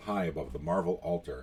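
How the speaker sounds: plain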